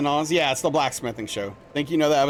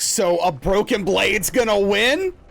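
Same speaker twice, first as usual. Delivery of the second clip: mock indignant, pissed-off, high-pitched complaining tone; 6 semitones higher, 3 dB louder than usual. Retelling a contestant's reaction after losing: imitating an angry man. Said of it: "and he was pissed".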